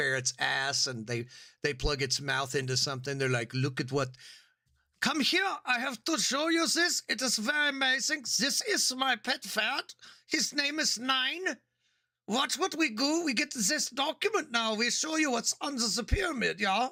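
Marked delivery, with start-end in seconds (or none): 3.5-16.9 very high, horrible, fake, put-on German accent. Imagining a fringe German archaeologist showing off his ferret, in a horrible German accent. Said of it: "That's a horrible accent".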